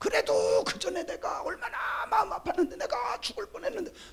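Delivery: very high-pitched, weepy, tearful crying voice. Describing someone who cries daily over a husband's past wrong, imitating tearful complaining. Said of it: "막 울면서 날마다 그래요".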